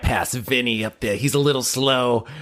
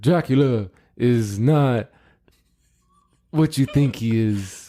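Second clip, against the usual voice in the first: movie-star impression, mumbled as if with marbles in mouth. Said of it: "The Marlon Brando with like marbles in your mouth".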